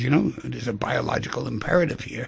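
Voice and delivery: ordinary talk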